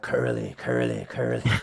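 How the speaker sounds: eerie, creepy, machine-like metallic voice with creak. Game master voicing a creepy program repeating a player's name, in a creepy metallic voice. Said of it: "that metallic voice repeating your name".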